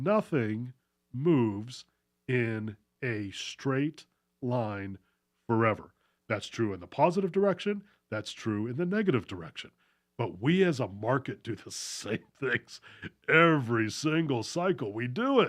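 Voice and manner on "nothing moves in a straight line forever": a little slowed down, slow and deliberate. Speaker repeats a point to listeners, even a little slower; said again a little slower. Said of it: "even a little slower".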